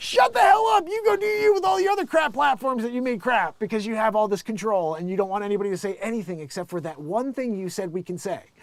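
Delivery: high, loud mock angry rant.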